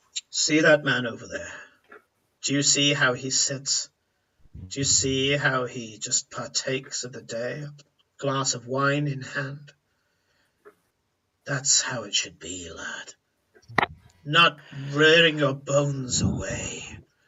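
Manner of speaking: voice dropped a little. Voicing a character in a story who speaks to a young man: lowered voice. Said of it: "he's lowering his voice slightly".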